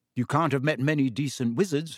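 ordinary delivery, nothing marked

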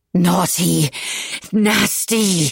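each word forced out in sharp, pained exhaled bursts. A woman struggling to stand through muscle spasms forces out each word in sharp exhales, as if in pain. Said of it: "Each word burst from her in a sharp exhale, as if she suffered terrible pain".

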